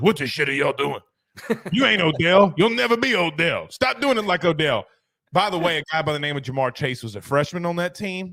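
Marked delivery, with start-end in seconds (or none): 0.0-4.9 raspy, rough voice rasped from the throat. Act out Orgeron talking to LSU receivers in the end zone, in a raspy Orgeron voice. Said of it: "in that raspy voice says".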